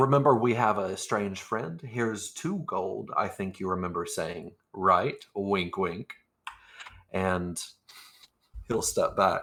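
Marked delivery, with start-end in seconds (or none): none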